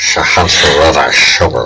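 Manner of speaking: put-on voice that comes out sounding drunk. Trying a Sean Connery impression that the other speaker says sounds drunk. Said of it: "now you just sound drunk".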